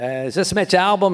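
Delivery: put-on heavy Boston accent. Retelling a long-distance phone call from a caller: imitating a thick Boston accent. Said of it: "a thick Boston accent".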